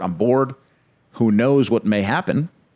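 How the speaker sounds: plain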